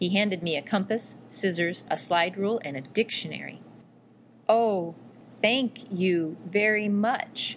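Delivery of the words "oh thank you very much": very slow, drawn-out speech, much slower pace. Narrating, the girl thanks the man who handed her school supplies, speaking very slowly. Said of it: "I spoke so slowly".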